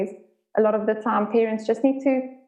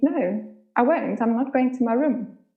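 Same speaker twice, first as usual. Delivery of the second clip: mock casual, offhand, nonchalant, unbothered tone; 2 semitones higher than usual. Retelling how the two-year-old son answered: imitating a nonchalant reply. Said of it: "he responded very nonchalantly".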